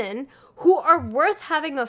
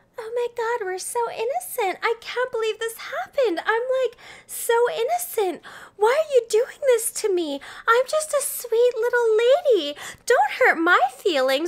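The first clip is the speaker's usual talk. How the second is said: high, put-on sweet, innocent voice; 9 semitones higher than usual. Acting out how women pretend when they are blamed: mock innocent voice. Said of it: "And we act like".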